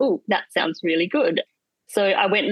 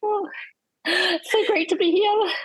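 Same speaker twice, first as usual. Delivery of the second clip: very high, slow, starstruck fangirl gush; 12 semitones higher than usual. Greeting the podcast host on joining: playing fangirl quiet. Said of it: "go all, um, fangirl quiet".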